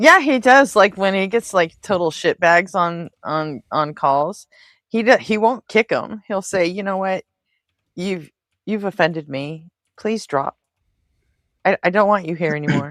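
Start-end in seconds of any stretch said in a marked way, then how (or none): 6.7-12.9 put-on calm, disappointed voice, higher pitch. Imitating the person on screen telling someone on a call to leave: imitating Mezzo, not mad just disappointed. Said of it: "his whole shtick seems to be, "I'm not mad, I'm just disappointed."".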